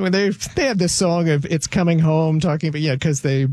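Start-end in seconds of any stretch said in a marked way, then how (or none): none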